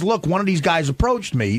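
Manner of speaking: ordinary talk, nothing marked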